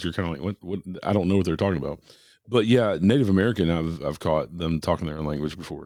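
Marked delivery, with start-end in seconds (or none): none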